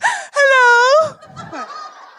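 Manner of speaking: condescending, very high-pitched "hello". Retelling breaking an awkward silence by looking a woman in the eye, mock-patronising hello. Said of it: "in my most patronising voice".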